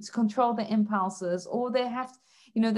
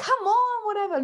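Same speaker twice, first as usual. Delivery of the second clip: put-on fed-up, angry outburst, pitched up; 11 semitones higher, 4 dB louder than usual. Speaker retells losing their temper with a police officer, retelling an angry outburst. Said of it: "I start getting angry".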